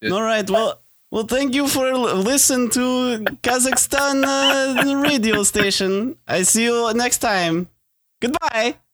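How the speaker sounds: slow delivery with a drawn-out "uh". Signing off after being asked to end in character: Borat voice. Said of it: "do the ending in Borat as Borat".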